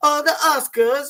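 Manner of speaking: put-on loud, high-pitched, odd-sounding Italian accent voice. Retelling a co-host's impression: imitating Sebastian Maniscalco impression. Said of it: "He was sounding like a weird Italian".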